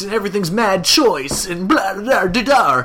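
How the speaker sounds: surfer dude voice. Describing a movie's surfer characters, imitating how they talk, surfer dude voice. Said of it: "they talk like this".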